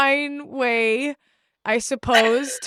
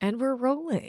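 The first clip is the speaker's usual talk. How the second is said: put-on radio announcer voice, much quieter; 7 dB quieter than usual. Announcing to a co-host that recording has started, in radio voice. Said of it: "Now it's radio voice".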